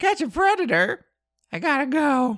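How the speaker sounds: very high-pitched clown voice. Retelling a To Catch a Predator episode, quoting a man dressed as a clown in a high voice. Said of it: "talking in this kind of high voice".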